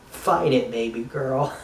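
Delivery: ordinary talk, nothing marked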